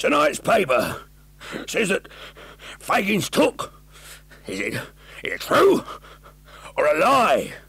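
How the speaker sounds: very high, breathless, halting, broken short phrases. Narrator reading Sykes's question to the silent group: Sykes, short thick breath. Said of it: "It was the very ghost of [name]. / Blanched face, sunken eyes, hollow cheeks, beard of 3 days' growth, wasted flesh, short, thick breath. It was the very ghost of [name]. / said [name], / thick breath".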